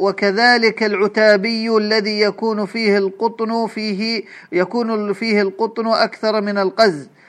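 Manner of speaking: ordinary delivery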